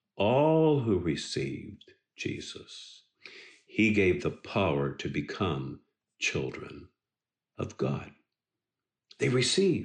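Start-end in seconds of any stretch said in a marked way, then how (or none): 0.2-3.1 emphasis landing hard on "all". Sermon quoting scripture about those who received Jesus: emphasis on all. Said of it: "I want to put emphasis on that word all".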